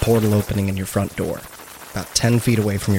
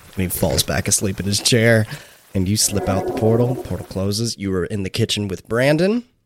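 ordinary talk, nothing marked

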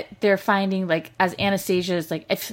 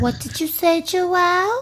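put-on baby voice, pitched higher; 10 semitones higher than usual. Retelling a preview clip, imitating Hannah's baby voice. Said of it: "how Hannah goes in her, like, baby voice".

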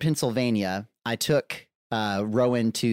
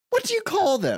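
fake English accent, pitched up, grown-up sounding. Retelling a toddler's question when he briefly acted like an adult; put-on English accent. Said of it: "I'm putting on the English accent".

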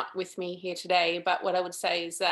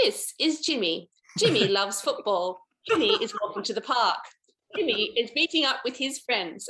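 clumsy, bad, put-on British documentary narrator accent; 4 semitones higher, 3 dB louder than usual. Recalling documentaries watched in london, mimicking the narrator in a bad british accent. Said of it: "Sorry about my bad British accent there".

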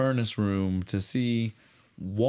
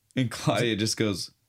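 usual speaking voice

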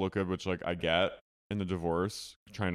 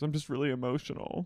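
mock high weepy voice, crying through the words; 7 semitones higher, 3 dB quieter than usual. Recapping a Zoom call scene where a woman sick with COVID cries: imitating someone crying. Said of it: "She's crying".

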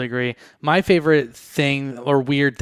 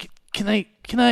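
put-on nervous stuttering, higher pitch; 9 semitones higher than usual. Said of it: "stuttering a lot".

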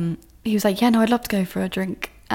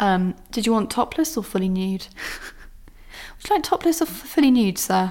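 put-on polite hospitality voice. Retelling a question put to a man, in a put-on hospitality accent. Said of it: "Still with my hospitality accent there for you".

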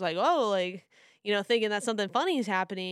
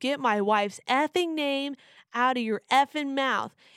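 mock shouting, acted yell; 4 semitones higher, 3 dB louder than usual. Retelling what a man yelled back after a G.I. Jane joke, retelling a yell. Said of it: "starts yelling".

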